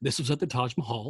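put-on very quiet, bone-dry, totally deadpan delivery. Retelling how he would present his trip to people: imitating a totally deadpan delivery. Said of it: "He would be like totally deadpan".

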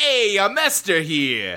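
put-on New York accent, narrator style. Pitching a mafia-movie narrator for the story of Esther, in a New York accent. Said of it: "a guy with like a New York accent being like".

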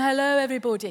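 put-on posh upper-class landed gentry voice. Showing how people put on a different voice to be accepted: landed gentry voice. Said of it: "That landed gentry voice".

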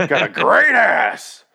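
put-on gruff movie-star voice. Joking with the co-host on mic, doing an Al Pacino impression. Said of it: "do that Al Pacino impression".

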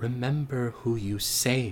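faint, soft, very quiet half-whisper. The game master voices Avasiel speaking to Garden in a soft half-whisper. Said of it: "A soft voice whispers out to you".

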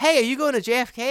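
mock high, called-out yell. Retelling how a guy on the train called out a question: imitating someone yelling. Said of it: "one of the guys on the train just yells at me".

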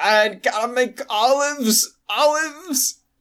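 high, very slow, dragging, drugged-out daze. Imagining a patient mid-surgery talking about olives: imitating a drugged-out woman. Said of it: "just drugged out of her mind".

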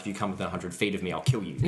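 normal talking voice

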